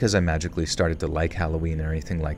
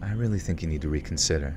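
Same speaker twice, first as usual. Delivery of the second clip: put-on, almost seductive voice. Retelling what she said after hearing why the speaker hated Halloween; retelling an almost seductive line. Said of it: "said in an almost seductive voice".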